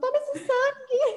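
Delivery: very high, devilish cat villain falsetto. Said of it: "Já veio a voz da Isma".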